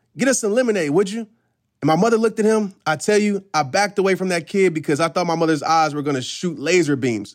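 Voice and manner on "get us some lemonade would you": fast, rude, barked delivery. Retelling how a friend spoke to the speaker's mother, retelling a barked order. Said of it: "he barked at her".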